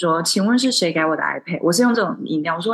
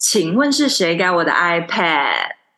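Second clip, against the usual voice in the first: pointed, more insistent tone. Retelling how the speaker repeated a question to a person ignoring it, retelling asking louder. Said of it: "然后声音更大".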